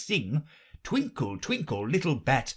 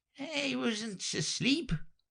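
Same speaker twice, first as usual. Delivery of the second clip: very high, weak, husky, hoarse and feeble; 12 semitones higher, 5 dB quieter than usual. Reading a story aloud, the Dormouse just woken: hoarse, feeble voice. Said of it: "in a hoarse, feeble voice".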